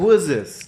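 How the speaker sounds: mock irritated tone, full of attitude. Retelling answering a scam call while sick: imitating an annoyed answer. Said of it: "I answered with an attitude".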